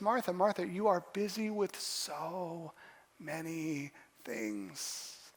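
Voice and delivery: soft, slow, tender, gently reproachful tone.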